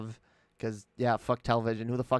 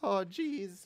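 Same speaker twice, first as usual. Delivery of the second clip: put-on nervous teen cartoon voice, higher pitch; 9 semitones higher, 3 dB quieter than usual. Switching to a voice that can be done: Morty voice. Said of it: "I can do the, uh, Morty, uh, voice".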